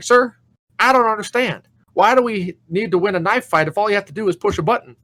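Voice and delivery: high-pitched put-on yelling voice. Retelling a movie scene of a recruit and a drill sergeant: imitating Jake Busey yelling. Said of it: "Jake Busey's yelling at his".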